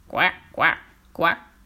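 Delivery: odd, strange frog voice. A frog calls out behind an old woman and a fool, in a weird frog voice. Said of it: "ils entendent derrière eux une voix bizarre".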